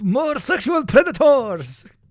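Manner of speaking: put-on mixed Chechen and Brazilian accent. Reacting to a video clip, imitating Uzbek or Chechen mixed with Brazilian accent. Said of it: "combination of an Uzbek, uh, or a Chechen".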